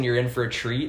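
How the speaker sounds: ordinary delivery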